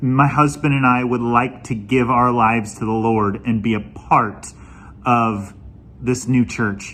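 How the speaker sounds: ordinary delivery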